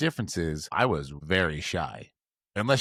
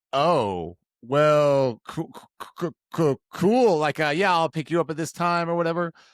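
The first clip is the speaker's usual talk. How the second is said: loud, high-pitched nervous stammer. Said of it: "So nervous".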